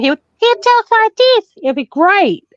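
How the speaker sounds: very high, tiny, squeaky helium voice. Joking about a woman's voice, doing Kermit the Frog on helium. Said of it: "if he was on helium".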